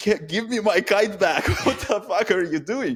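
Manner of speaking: shrill, very high-pitched scream. Retelling how a guy on the beach screamed at the speaker, imitating someone screaming. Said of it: "The guy screaming at me from the beach".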